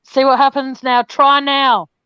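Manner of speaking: loud yelling, shouting the words out. Urging someone who is backstage to try again, yelling. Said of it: "I don't know why I'm yelling".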